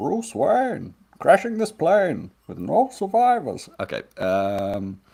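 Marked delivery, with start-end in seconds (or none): 0.0-3.7 very high villain voice with widely swinging pitch. After asking how to get into the voice, saying a last sentence, Bane voice. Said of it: "Bane voice for Anatar dialogue".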